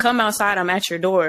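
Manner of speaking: ordinary talk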